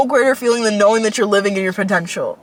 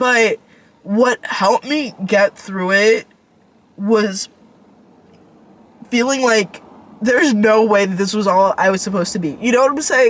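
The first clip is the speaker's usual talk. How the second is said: talking through held-back tears. Talking through a hard moment, holding back tears. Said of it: "I'm trying not to cry".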